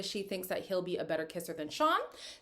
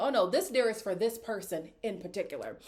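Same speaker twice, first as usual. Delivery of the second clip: usual speaking voice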